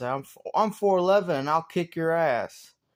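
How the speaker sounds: play-acted, loud yelling, projected across a room. Speaker retelling what one voice in their head yelled at the bad voices, imitating someone yelling. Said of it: "this one guy yelled out".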